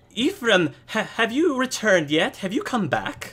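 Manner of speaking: very high-pitched woman's voice. Voicing an elderly noble woman greeting a player: Lady Annabelle Stroud voice. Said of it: "the woman says".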